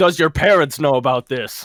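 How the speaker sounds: mock half-shouted, mild confronting yell. Retelling a cop's question, imitating a cop screaming. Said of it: "he screams at me".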